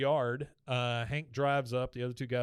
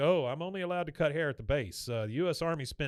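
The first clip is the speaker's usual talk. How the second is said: normal talking voice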